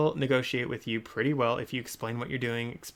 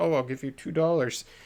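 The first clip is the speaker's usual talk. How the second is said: timid, hesitant, meek, unsure voice; 3 semitones higher than usual. Showing how not to make an offer: mock meek, unsure offer. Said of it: "shifty eyes and be like".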